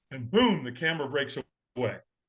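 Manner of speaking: ordinary delivery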